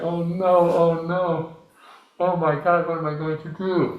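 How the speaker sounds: exaggerated, high, drawn-out fake blubbering and sobbing. Telling a joke about a man in the morgue: mock crying. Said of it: "the man is crying".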